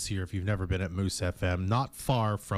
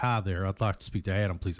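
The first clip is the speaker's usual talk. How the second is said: put-on southern US accent, maybe the wrong one. Showing how a caller from San Antonio might sound, in a possibly wrong southern accent. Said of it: "I could be doing the wrong southern accent".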